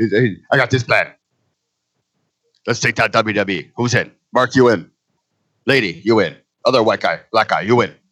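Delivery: put-on Japanese accent in English. Impersonating the new president of New Japan pitching a plan, in a put-on Japanese accent. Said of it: "So this is my Japanese voice".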